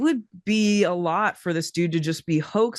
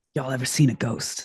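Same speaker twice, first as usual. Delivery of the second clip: low, mock grave, suddenly serious voice; 5 semitones lower than usual. Retelling how a man leaned in close and got serious: imitating someone turning serious. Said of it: "he gets, like, real serious".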